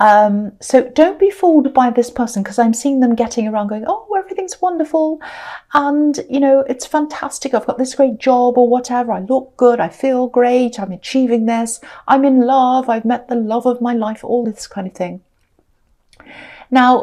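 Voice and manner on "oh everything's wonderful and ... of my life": ordinary delivery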